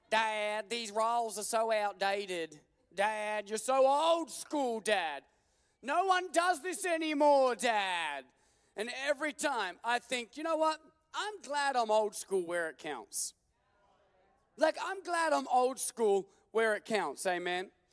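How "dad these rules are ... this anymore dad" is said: put-on slow little American kid voice. A dad quotes what one of his kids keeps reminding him, in little american voices. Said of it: "little American voices".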